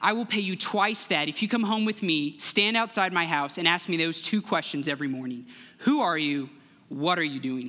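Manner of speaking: normal talking voice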